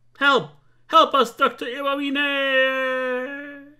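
calling out loudly. A game character calls out to the doctor, shouting for help. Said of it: "no need to shout".

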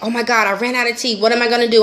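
fake panicking. Acting out running out of tea: mock panic. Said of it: "I'm panicking".

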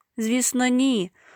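high, outraged, bristling, indignant tone. Sashko answers Aliya's question: indignant. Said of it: "обурився Сашко".

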